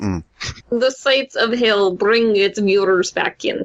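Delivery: put-on Russian accent. Redoing a line after being told it was said wrong: put-on russian accent. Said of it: "It's a Russian accent".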